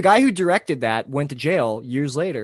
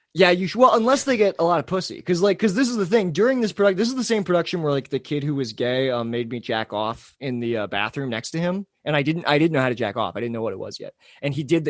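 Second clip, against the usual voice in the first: ordinary talk, nothing marked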